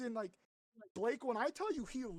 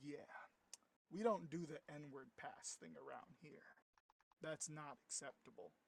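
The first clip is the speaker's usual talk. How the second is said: put-on very quiet, very low, dead serious tone; 8 semitones lower, 10 dB quieter than usual. Retelling how a guy responded on mic to a dark joke, in a full serious voice. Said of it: "full serious voice".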